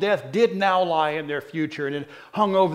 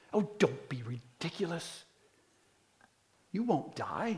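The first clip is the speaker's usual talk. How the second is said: mock, very quiet, hushed, indignant tone; 11 dB quieter than usual. Speaker retelling Satan's dismissive reply, in a mock-indignant Satan voice. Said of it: "you can almost hear the indignancy in Satan's voice".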